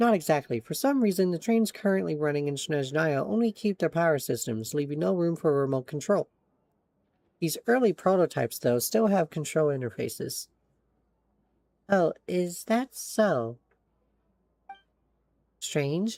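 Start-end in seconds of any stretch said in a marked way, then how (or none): 11.9-16.2 much slower, drawn-out speech. In a game scene, a character finds their own speech dragging: speaking very slowly. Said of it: "Why is Paimon speaking so slowly?".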